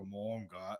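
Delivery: voice dropped into a deep, booming, chest-deep yell. Speaker recalls a cheering boy changing his voice; imitating Steven's deep voice. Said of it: "He has a very deep voice".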